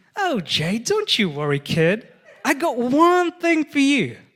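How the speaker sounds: very loud, high, fake American accent. Retelling what Miss Rachel told them, imitating Miss Rachel's American accent. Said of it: "that's the best American impression I could do".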